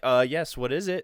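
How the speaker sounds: put-on, overly courteous, polite tone. Retelling being called back over a burrito order, put-on polite customer voice. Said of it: "Like my customer voice".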